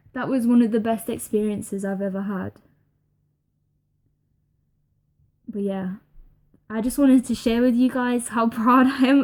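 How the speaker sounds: emotional voice full of feeling, close to happy tears. Speaker addressing their audience directly about a proud moment, getting emotional. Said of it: "I told you I'd get emotional".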